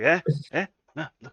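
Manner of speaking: put-on drunk man's voice, sounding properly drunk. Imitating how he talks when drunk: imitating drunk Colin Farrell. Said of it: "When he's drunk, he's like".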